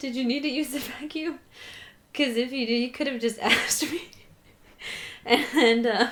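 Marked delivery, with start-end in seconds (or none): 0.0-4.0 speaking through laughter. Retelling what a man said, laughing while talking. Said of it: "I'm trying to say it without laughing".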